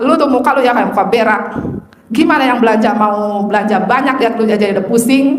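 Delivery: ordinary talk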